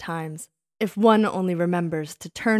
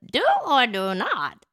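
drawn out, slow and high; 6 semitones higher than usual. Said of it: "You should have said".

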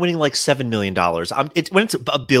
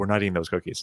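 muttered under the breath, quieter and lower; 6 semitones lower, 8 dB quieter than usual. Retelling what the speaker's mother said as they were leaving: said under her breath. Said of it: "she said under her breath".

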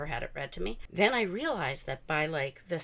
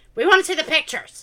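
put-on shrill, very loud, very high kid's yell; 11 semitones higher, 14 dB louder than usual. Retelling a kid at the back while she read aloud, imitating a kid yelling. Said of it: "he's like yelling it from the back".

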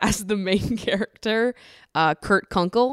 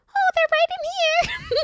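squeaky, piping, high-pitched little voice. Retelling a movie chainsaw killer's answer to another man, high-pitched voice. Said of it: "he's like speaking in this high-pitched voice".

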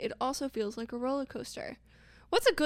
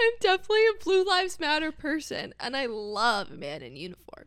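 sarcastic, tongue-in-cheek, put-on mocking tone; 4 semitones higher, 4 dB louder than usual. Saying a line after being asked to say it mockingly: put-on mocking tone. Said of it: "Just say it, like, mockingly".

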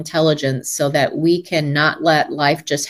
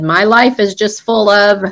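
put-on crying child voice, higher and louder; 4 semitones higher, 5 dB louder than usual. Retelling a story about a child stuck in a room: imitating a crying child. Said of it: "one little kid starts to cry and said".

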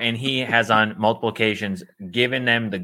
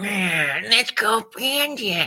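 creepy creature voice, much higher pitch; 10 semitones higher than usual. Describing a man who turns from Sméagol into Gollum, the speaker quotes him: imitating a creepy Gollum voice. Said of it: "He goes from Schmeagol and then he's into Gollum".

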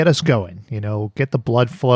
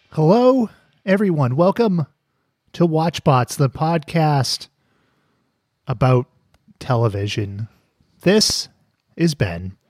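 easygoing, calm radio-host voice, pitched up; 5 semitones higher than usual. Host opening a television podcast episode, trying to sound welcoming; calm radio host tone. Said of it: "You've got this NPR host vibe going on".

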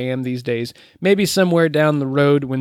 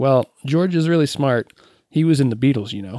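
acted flat, expressionless delivery. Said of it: "deadpanned looked at [name] and said".

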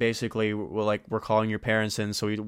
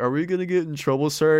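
high, acted voice on the verge of tears; 6 semitones higher, 5 dB louder than usual. Retelling asking a man, while sitting in the car, imitating being near tears. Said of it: "in the verge of tears".

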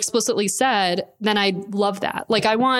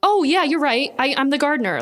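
play-acted, pitched-up, just-remembered tone; 5 semitones higher than usual. Retelling a movie character's reply to being called the gardener, imitating someone who just remembered. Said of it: "he says it like he forgot".

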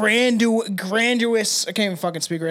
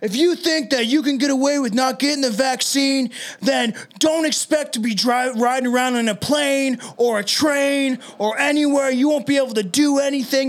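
put-on domineering dictator-style screaming tirade; 4 semitones higher than usual. Retelling what a campaigner yelled at a private event: imitating screaming like a dictator. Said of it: "he's screaming like a dictator at the top of his lungs".

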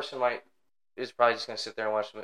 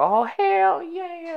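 very high, loud, raised yell; 6 dB louder than usual. Speaker recounting a moviegoer who yelled at the screen, retelling a yell at the screen. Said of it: "started yelling at the screen".

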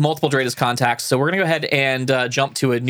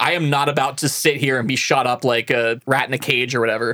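normal talking voice

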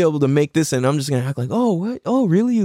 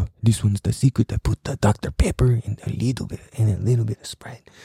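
heavily laid-on put-on Mexican accent; 7 semitones lower than usual. Recalling an uncle's secret recipe, the speaker imitates Uncle Larry with a Mexican accent. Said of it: "that kind of got a Mexican accent on it".

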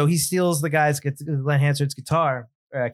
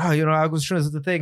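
mock heavy Irish accent, mumbled, dazed-sounding. Retelling a scene's crackhead character, imitating a super Irish, out-of-it voice. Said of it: "super Irish and he's so, like, out of it".

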